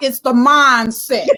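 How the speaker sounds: loud, boisterous, put-on voice. Voicing an auntie's typed comment, imitating Wanda, loud and boisterous. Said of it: "like real loud and real boisterous".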